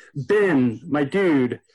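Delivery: normal talking voice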